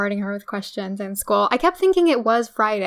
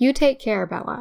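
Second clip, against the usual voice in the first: solemn, very serious, grave, dead-serious delivery; 2 semitones higher than usual. Recapping a story, quoting Billy's words to Bella, in a very serious tone. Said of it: "in a very serious tone".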